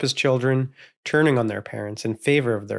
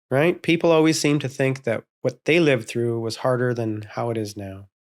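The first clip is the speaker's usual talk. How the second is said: plain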